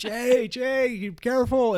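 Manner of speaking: very high, very slow, drawn-out scream. Retelling a warning to a friend near a snake: retelling a scream. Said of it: "so I'm screaming".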